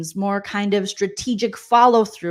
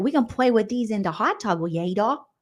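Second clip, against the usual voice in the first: put-on playful, babyish, cutesy baby-talk voice. Retelling two house guests talking about toys for the hot tub: imitating baby voices. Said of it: "they did baby voices".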